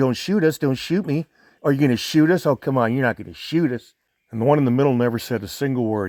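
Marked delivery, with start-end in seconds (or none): 0.0-3.9 restrained, mild half-yell. Recounting the confrontation, the speaker imitates an advancing man yelling at him. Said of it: "he was yelling".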